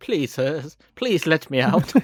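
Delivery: plummy, proper, posh upper-class English accent. Imagining Ravage speaking politely: proper posh voice. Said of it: "a proper posh voice".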